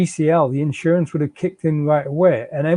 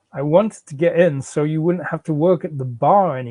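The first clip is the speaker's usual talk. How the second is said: ordinary delivery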